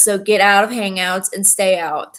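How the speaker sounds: ordinary talk, nothing marked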